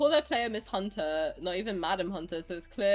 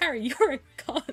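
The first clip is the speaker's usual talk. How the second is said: mock blurted delivery, higher; 6 semitones higher than usual. Retelling mum suddenly saying a word during a peaceful drive: imitating mum blurting it out. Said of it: "just turned around and just blurted it out".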